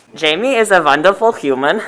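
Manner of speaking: clumsy, bad, butchered put-on German accent. Asked to read a line in an accent, a speaker reads it in a bad German accent.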